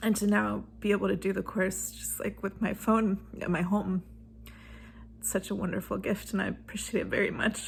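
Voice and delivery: tearful. Thanking a man whose years of work made the course possible, crying. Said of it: "sorry, I'm crying".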